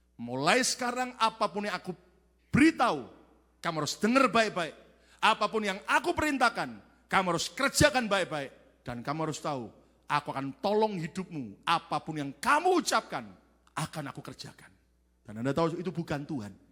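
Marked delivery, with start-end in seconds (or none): none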